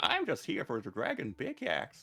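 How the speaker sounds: put-on whimsical old man voice. Answering talk about voices changing with age: put-on whimsical old man voice. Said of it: "Why are you a whimsical old man?".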